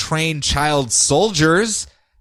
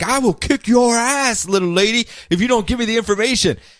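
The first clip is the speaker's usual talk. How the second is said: put-on tough-guy voice, pitched up, menacing; 7 semitones higher than usual. Retelling a comic scene where one hero threatens a girl: imitating a threat. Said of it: "Jason Todd's threatening her".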